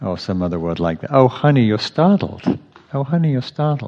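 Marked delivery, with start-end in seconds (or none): 1.1-3.9 tender, sweet, affectionate, pitched-up tone. Quoting a phrase said to oneself when agitated: imitating Sylvia, sweet and affectionate. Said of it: "It's a very sweet, affectionate".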